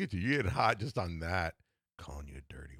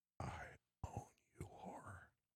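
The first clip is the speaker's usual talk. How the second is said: very soft, close whisper with almost no voice. Describing a man's hold, speaker repeats what he says in your ear, whispering. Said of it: "he whispers in your ear".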